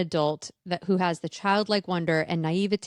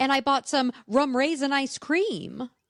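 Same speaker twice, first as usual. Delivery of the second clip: quirky, odd emphasis, stresses landing in unexpected places; 8 semitones higher than usual. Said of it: "Just like when she goes".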